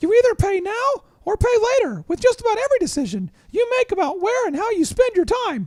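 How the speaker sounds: pitched way up high and sing-song. Reading a quote from Lee Cockrell as a tribute, in a Mickey Mouse voice. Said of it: "I'm going to read it with a Mickey Mouse voice".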